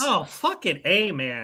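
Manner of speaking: upset and frustrated. Reacting in a debate with the others: upset. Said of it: "Why are you getting so upset?".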